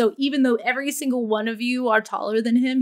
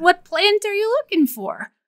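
masculine gnome voice with a high ring; 8 semitones higher, 3 dB louder than usual. Narrating a game, voicing a gnome standing in front of the players, high-pitched gnome voice. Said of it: "And you turn around to see a gnome standing in front of you. ... This one is a little bit more masculine, but it does have like a high pitch to it".

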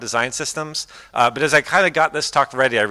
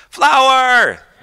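put-on very high, loud, impatient, demanding toddler voice; 14 semitones higher, 7 dB louder than usual. Retelling how a two-year-old son asks when refused a flower: imitating a toddler demanding. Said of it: "When he really wants a flower and you're not giving it to him".

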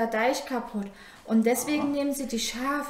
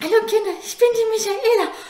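breathless, shrill, very high and booming loud; 10 semitones higher, 8 dB louder than usual. At a children's church service, the assistant Michaela greets the children, out of breath. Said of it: "Ich bin ein bisschen außer Atem".

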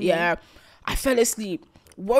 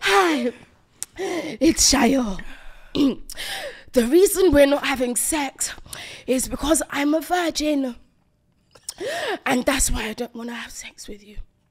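mock heavy drunk panting, higher; 3 semitones higher than usual. Reenacting a drunk voice note sent while walking back: imitating own drunk panting voice note. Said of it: "I was panting. I was heaving".

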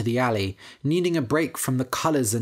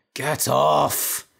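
hoarse, croaking voice; 3 dB louder than usual. Woken by someone pulling his arm, a weakened man pushes him away: hoarse croak. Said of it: "he croaked".

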